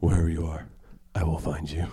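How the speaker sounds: badly done put-on menacing movie-style voice. Retelling a man quoting a movie on the phone: terrible Liam Neeson impression. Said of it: "that's a terrible Liam Neeson impression".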